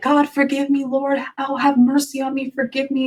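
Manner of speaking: acted tearful voice. Retelling falling to the ground before this guy: retelling crying while praying. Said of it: "I started cr-, like, crying, like".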